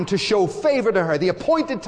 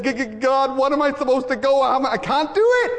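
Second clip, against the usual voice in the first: put-on stammer in a much higher voice; 5 semitones higher than usual. Retelling Moses answering God, speaker does a stammering Moses impression. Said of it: "stammering, stuttering".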